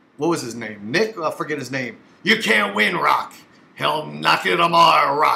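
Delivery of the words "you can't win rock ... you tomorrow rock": rough, creaky put-on boxing-trainer voice. Quoting Rocky Balboa's trainer from Rocky: Burgess Meredith impression. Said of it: "I do a better Burgess Meredith from Rocky".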